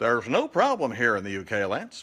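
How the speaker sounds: put-on plain American Midwestern accent. Quoting what friends tell him, voiced like a Midwesterner: American Midwestern accent. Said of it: "they don't sound like that. That's that's like somebody from the Midwest".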